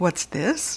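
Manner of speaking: muttering. Turning a machine back on, he peers at the wall, muttered. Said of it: "he muttered".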